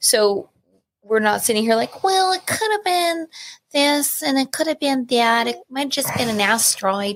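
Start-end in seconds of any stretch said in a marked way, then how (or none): 2.0-7.2 put-on voice of an old woman. Speaker imitates someone giving a vague explanation, old lady voice. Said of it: "that sounds like an old lady".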